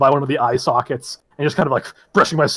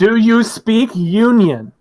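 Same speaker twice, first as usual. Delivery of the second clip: slow, loud, pitched-up, spelled-out over-explaining; 7 semitones higher, 3 dB louder than usual. Mimicking how a character talks to someone who can't understand, talking slower and louder. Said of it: "talk slower and louder when somebody can't understand".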